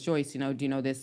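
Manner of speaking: normal talking voice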